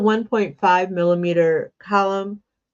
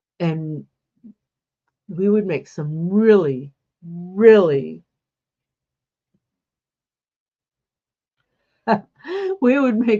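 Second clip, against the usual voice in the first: words breaking up with laughter. Recalling sunday afternoons crocheting with mom as a kid, laughing while talking. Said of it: "I'm laughing here".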